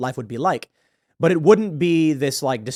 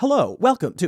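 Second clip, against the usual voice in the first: put-on pitched-up, old recorded automated machine voice; 6 semitones higher than usual. Contrasting an older machine greeting: old automated machine voice. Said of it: "that old voice of like".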